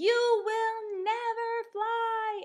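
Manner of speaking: huge, shrill, slow, drawn-out scream. Showing how to read a book's uppercase line aloud: screaming, very big. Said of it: "they want you to scream and make this really big".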